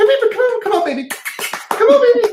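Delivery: put-on very high, coaxing baby talk. Retelling how tough handlers call their dogs: high-pitched voice to a dog. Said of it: "the higher pitch causes them to calm down".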